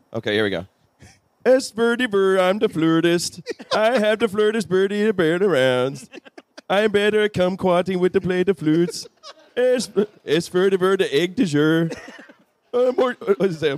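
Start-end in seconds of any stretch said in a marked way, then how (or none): 1.4-13.1 high put-on Swedish accent, nonsense babble. After apologizing in advance to true Swedes, doing a Swedish Chef voice. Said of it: "in a Swedish ac- chef accent".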